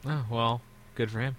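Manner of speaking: very low, indifferent voice. Reacting to news that he beat Swagger, sounding uncaring. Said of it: "you sound so uncaring".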